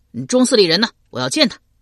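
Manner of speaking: loud, urgent shout at full volume, pitched high. A narrator reads a character rushing to the hall opposite and calling out, shouted. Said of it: "直奔到对面的中府叫道".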